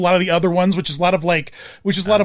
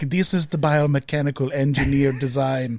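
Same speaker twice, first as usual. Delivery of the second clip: half-whispered, slow, soft, drawn-out delivery; 5 semitones lower, 5 dB quieter than usual. Describing a documentary, imitating H R Giger half-whispering. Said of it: "it's just him whispering".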